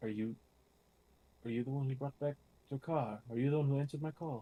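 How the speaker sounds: half-aloud hushed mutter under the breath. Asking an unseen presence in character who answered the call, said under the breath. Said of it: "I will say kind of out loud under my breath".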